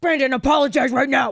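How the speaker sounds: loud, firm, stern fatherly voice. Acting out Jim speaking to Brandon, imitating Jim's stern tone. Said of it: "Jim comes out in his stern tone".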